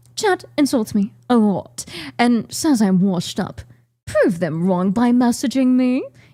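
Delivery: put-on British accent. Reading a dating profile aloud as a friend: put-on British accent. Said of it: "How do you be British?".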